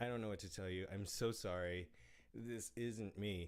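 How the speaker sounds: normal talking voice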